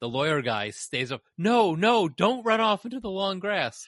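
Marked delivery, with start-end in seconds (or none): 1.4-3.9 very high, frantic, shrill screaming yell. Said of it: "Again, he's screaming and yelling".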